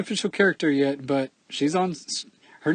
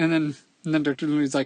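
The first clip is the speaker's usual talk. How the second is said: normal talking voice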